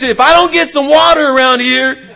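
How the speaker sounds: very high angry voice. Speaker describing an unhappy restaurant customer, imitating a raised angry voice. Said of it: "who raises their voice".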